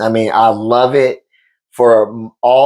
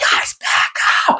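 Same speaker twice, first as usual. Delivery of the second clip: mock screaming voice. Retelling parents yelling at their kids in the outfield: imitating parents screaming. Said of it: "they're screaming at the top of their lungs".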